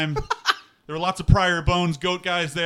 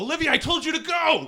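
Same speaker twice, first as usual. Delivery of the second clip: shrill, very high-pitched shouted yell; 10 semitones higher than usual. In a role-playing game, a character calls out to another character, yelling out. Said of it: "I yell out".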